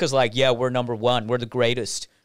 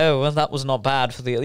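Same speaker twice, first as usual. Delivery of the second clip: put-on posh British voice. Imitating posh British people who look down on Australians: imitating posh British people. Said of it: "posh British people".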